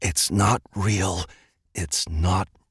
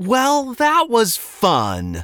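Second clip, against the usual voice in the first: loud, very high, swooping sing-song mocking taunt; 5 dB louder than usual. A narrator reads one character taunting another: taunting. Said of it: "Liam taunted".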